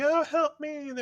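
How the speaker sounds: very high, shrieking, acted-out scream. Imagining the burned man calling out: imitating someone screaming. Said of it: "when he's screaming".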